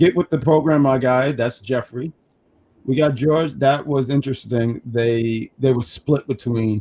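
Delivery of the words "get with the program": plain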